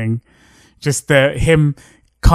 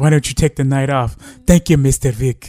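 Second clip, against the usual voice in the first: very bad fake Russian accent. Quoting a movie cameo scene to co-hosts in the worst Russian accent ever. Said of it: "Just the worst Russian accent ever".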